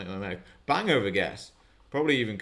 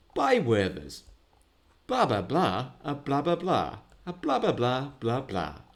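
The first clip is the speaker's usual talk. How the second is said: patronising, condescending commercial voiceover read; 4 semitones higher than usual. Speaker shows the voiceover voice used for the job, advert voiceover voice. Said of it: "the voiceover I use for my job".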